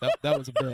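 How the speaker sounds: low, loud, laughing, protesting delivery.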